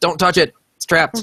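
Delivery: high, urgent, alarmed shout. Voicing a character who runs back down to warn the others: yelling a warning. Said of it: "Eddie runs back down and yells".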